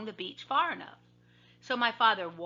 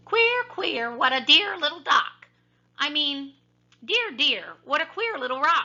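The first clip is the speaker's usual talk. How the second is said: funny, high, loud tiny mouse voice; 6 semitones higher, 5 dB louder than usual. Narrator reads a mouse's words heard by a sleeping father, funny little voice. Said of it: "a funny little voice saying".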